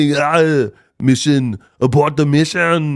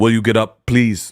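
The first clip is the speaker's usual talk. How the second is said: deep, bassy masculine voice, much lower in pitch; 5 semitones lower than usual. Showing how they'd tell someone who slipped and fell to get up, bassy masculine voice. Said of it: "put some bass in your voice".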